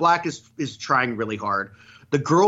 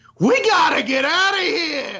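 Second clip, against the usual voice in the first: very high, drawn-out, intense urging voice; 13 semitones higher than usual. Retelling an intense movie line: intense Danny DeVito impression. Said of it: "he's doing a Danny DeVito impression".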